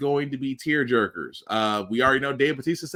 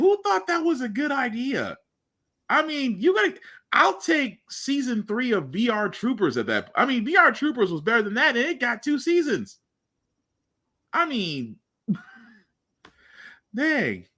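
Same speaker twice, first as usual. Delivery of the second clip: very high-pitched, swooping, exasperated, angry rant; 9 semitones higher than usual. Complaining about who approved a tv show, angry. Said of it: "I don't mean to sound angry".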